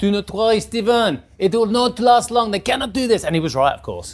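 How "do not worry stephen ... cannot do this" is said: put-on French-accented English, pitched up. Act out your French boss answering you when you said you were broke, in Bernard's French accent. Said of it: "That was a French accent".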